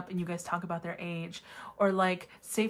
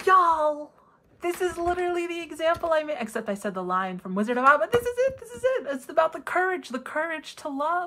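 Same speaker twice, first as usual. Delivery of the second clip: thrilled, bursting enthusiasm, high and loud; 9 semitones higher, 5 dB louder than usual. Reacting to a tiger example that matches one the speaker made, excited. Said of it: "I don't know why I'm so excited".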